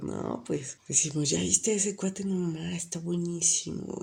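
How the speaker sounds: put-on playful, mocking, teasing taunting tone. A woman retells answering a man's question, in a retold mocking tone. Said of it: "en tono burlón le digo".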